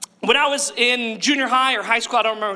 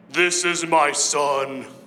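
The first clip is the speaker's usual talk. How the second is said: rock-bottom deep voice, very low, slow, drawn out; 7 semitones lower than usual. Telling the baptism story, the voice from heaven speaks: as deep as possible. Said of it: "That's as deep as my voice gets".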